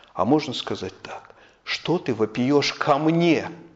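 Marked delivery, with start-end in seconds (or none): 1.7-3.5 leaning hard into ко мне. Reading aloud the Lord's words to Moses: stress on ко мне. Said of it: "я это читаю таким образом, с ударением на «ко мне»".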